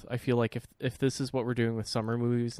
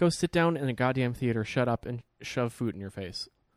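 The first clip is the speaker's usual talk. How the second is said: ordinary delivery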